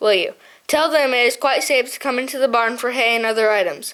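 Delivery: ordinary delivery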